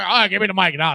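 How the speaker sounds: put-on boozy, drunk-sounding speech. Retelling how someone acted after getting drunk: imitating a drunk person. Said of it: "then he starts getting drunk".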